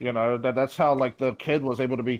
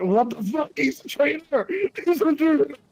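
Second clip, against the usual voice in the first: mock, very high, outraged shrieking scream; 14 semitones higher, 3 dB louder than usual. Recounting a friend's reaction from the other room, retelling a friend's screaming. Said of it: "screaming in the other room".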